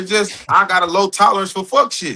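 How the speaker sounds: ordinary talk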